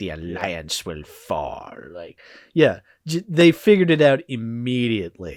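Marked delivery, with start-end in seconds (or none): 0.0-1.7 put-on very low, crotchety, hammed-up villain old geezer voice. Quoting the Emperor in a hammy decrepit old man voice. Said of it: "hammy and just being like".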